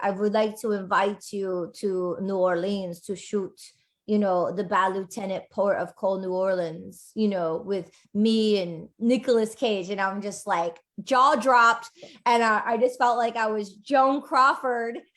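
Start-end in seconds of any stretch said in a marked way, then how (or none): 0.0-9.9 English spoken with a put-on German accent. Recounting a director's phone call to the speaker, in Charles Winkler's German accent. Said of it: "he called me in his German accent and he's like".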